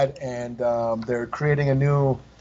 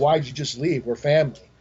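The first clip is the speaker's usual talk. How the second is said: ordinary talk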